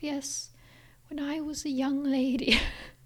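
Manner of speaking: slow, put-on grand Victorian dowager countess voice. Joking about sounding old while recalling childhood: Victorian dowager countess voice. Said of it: "some dowager countess from the Victorian period being like".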